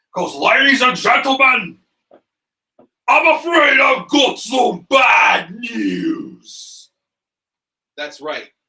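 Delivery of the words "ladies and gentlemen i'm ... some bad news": put-on very high, swooping, slow drawling British accent. Revealing the number one pick on the list: British accent as Bad News Barrett. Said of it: "Get my British accent ready".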